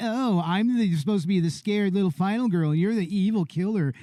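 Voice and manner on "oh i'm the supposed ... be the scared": plain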